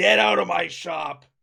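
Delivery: loud, slow, rough, drawn-out angry voice. Voicing a shopkeeper shuffling the players out: shopkeeper throwing players out. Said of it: "pulls out a sword".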